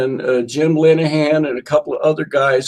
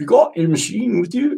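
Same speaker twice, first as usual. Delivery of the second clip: put-on British accent, higher; 5 semitones higher than usual. Recalling being asked about his bass guitar, quoting Denny Cordell in a British accent. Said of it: "in a British accent".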